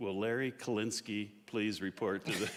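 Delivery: ordinary delivery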